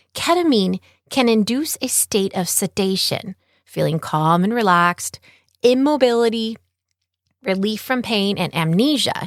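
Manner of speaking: ordinary delivery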